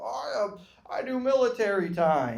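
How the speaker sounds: snooty, self-important, slow pretentious drawl. Mocking people who use military time: mocking a pretentious person. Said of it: "You just wanna be pretentious".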